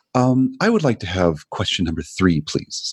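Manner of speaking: put-on sing-song, polite, courteous old-man voice. Retelling how a trivia player politely picked his question: imitating a polite old guy. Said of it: "That's a good impression".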